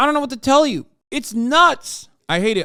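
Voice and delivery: loud, high, furious, angry shouting rant. Ranting about people who are against learning, angry yelling. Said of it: "I'm yelling because it pisses me off".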